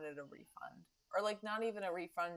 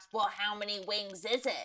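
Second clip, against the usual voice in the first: snappish, angry troll voice; 3 dB louder than usual. Retelling a phone call with Antonio, an old boss, imitating Antonio's angry troll voice. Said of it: "in his angry troll voice, he snaps".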